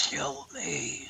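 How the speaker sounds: hushed whisper. Game narrator voices a woman in the dark rain begging the players, whispering. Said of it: "and she whispers".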